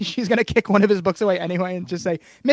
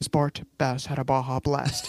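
put-on hushed breathy whisper, lower and quieter; 6 semitones lower, 6 dB quieter than usual.

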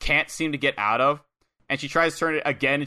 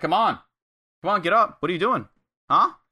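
high-pitched, jeering, mocking taunting tone; 4 semitones higher, 3 dB louder than usual. Speaker recapping a wrestling match, voicing Yuta taunting Adora, acting out a mocking taunt. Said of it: "Yuta starts to mockingly".

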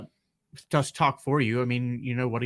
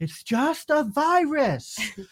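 put-on yelling child voice, pitched higher. Retelling how Daniel yelled at everyone in the store: imitating Daniel yelling. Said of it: "He started yelling".

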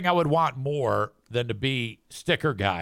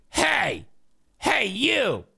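rude, bitchy, high, creaky call-out with swoops; 9 semitones higher than usual. Speaker retells a morning-show news lady calling out from behind, imitating Lynn Woodison's bitchy voice. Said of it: "I hear this bitchy-ass voice come up behind me".

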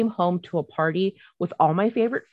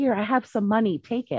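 mimicked whisper, higher; 5 semitones higher than usual. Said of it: "whisper to me".

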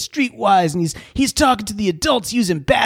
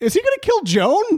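incredulous tone, much higher pitch. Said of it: "And I'm like".

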